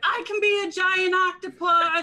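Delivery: high shout, called out. In a role-playing game, a player's character shouts back to the group: shouting back. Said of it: "I'm gonna shout back".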